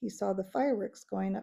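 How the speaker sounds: plain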